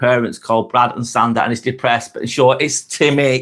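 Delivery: normal talking voice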